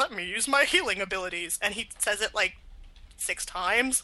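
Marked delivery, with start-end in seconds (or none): 0.0-1.6 mock gruff, bored voice. Retelling a game character's repeated line: imitating a gruff, bored game voice. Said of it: "there's a guy at the very beginning who's like".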